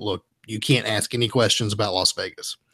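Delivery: normal talking voice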